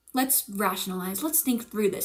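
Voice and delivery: calm, rational, soothing voice. Retelling own reaction while the friend panicked: imitating own past calm. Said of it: "zen mode where I was like".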